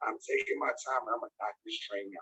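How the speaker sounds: very low, scratchy, hoarse, raspy voice. Addressing a group about recruiting, the speaker carries on: hoarse, raspy voice. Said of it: "even as hoarse and raspy as I sound".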